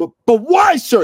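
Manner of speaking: put-on flustered outburst. Retelling a story where a flustered man finally questions the sir he addresses, mock-flustered blurt. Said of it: "He finally blurts out".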